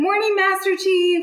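put-on chipper, all-happy voice at a very high pitch. Retelling walking upstairs to greet the master chief, acting out being all happy. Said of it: "like all happy".

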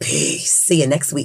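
deepest voice, hushed and breathy, near whisper. Signing off the podcast until next week, in deepest [name] voice. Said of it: "in my deepest [name] voice".

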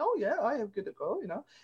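bad put-on Romanian accent. Retelling a historian's reply to the group's suggestion, in a romanian accent. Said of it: "that's my Romanian accent".

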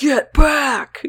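protective, scary, stern dad voice. Quoting a friend's warning from that night, in a put-on scary dad voice. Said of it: "That's when my scary dad voice comes out".

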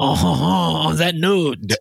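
poor put-on French accent. On a show, joking about doing episodes in a French accent: bad Pepe Le Pew voice. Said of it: "With my bad Pepe Le Pew voice".

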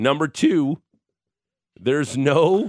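voice cracking. Listing what a ballot leaves out, voice cracking. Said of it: "As my voice cracks".

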